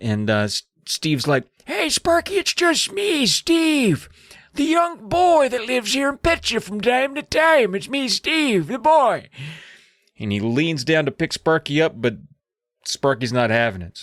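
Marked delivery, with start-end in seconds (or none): 1.7-9.3 put-on very high, frail, raspy old man voice. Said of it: "weak and raspy like his grandpa's".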